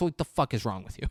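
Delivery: ordinary talk, nothing marked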